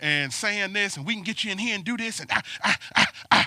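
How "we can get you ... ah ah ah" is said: quick-talking, rattled-off car salesman patter, fast. Retelling a car dealership salesperson's pitch, imitating a salesperson talking fast. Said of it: "the person got to talking fast".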